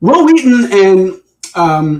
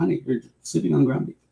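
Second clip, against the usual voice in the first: very quiet, soft, creaky murmur; 5 semitones lower, 13 dB quieter than usual. Retelling a movie scene, quoting the actor's line: imitating Kevin Nealon's delivery. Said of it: "it's just the way he says it".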